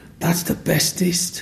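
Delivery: put-on high, slow, whispered, impressed child's voice.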